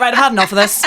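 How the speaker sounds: sudden, short, clipped. Retelling own words just now, playing up how it sounded: imitating own abrupt tone. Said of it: "that sounded very abrupt there".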